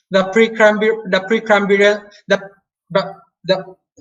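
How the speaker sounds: stuttering over a word. Explaining fossil layers to another speaker: stammering. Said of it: "sorry, stammering again".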